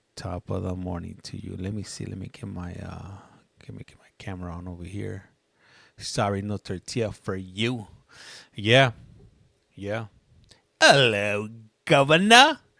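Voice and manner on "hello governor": very loud, booming, swooping fake British accent. Practicing British talk while setting up a camera, in a fake British accent. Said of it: "I was practicing some other word, uh, some other uh, British talk".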